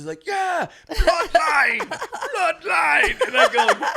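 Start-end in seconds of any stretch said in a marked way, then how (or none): 0.3-3.3 put-on raspy Jamaican-accented voice, pitched up. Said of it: "raspy, like, Rasta kind of voice".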